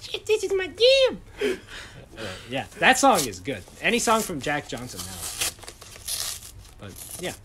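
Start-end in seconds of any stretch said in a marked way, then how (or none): 0.0-1.2 put-on very high, loud, thrilled child squeal of joy. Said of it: "I was like".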